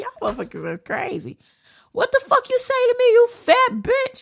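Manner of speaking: put-on very high, swooping voice, laughing through the words. Retelling own reply to disrespectful kids in a store: imitating own laughing reply. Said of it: "I'm laughing like".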